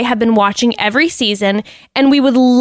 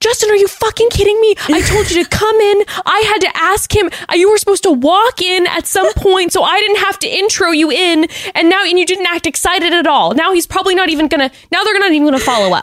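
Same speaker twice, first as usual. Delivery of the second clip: mock frantic, furious, high-pitched angry freak-out; 8 semitones higher than usual. Imagining what she said to him after the cameras cut: imitating someone freaking out. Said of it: "freaking out at him and being like".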